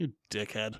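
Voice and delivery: muttered under breath. Retelling a script scene, a reporter's insult to Clark: muttered under breath. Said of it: "under his breath".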